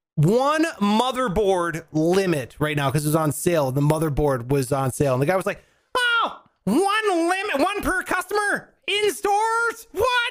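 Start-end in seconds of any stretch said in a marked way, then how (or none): 6.0-10.3 very high, drawn-out, outraged nerdy tantrum. Retelling a customer's reaction to a one-per-customer limit, mimicking his fit. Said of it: "he's like throwing a shit fit like a nerd".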